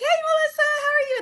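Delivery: very high-pitched, casual, small-talk tone. Imitating acquaintances who greet the speaker by name: high voice. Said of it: "in that high voice".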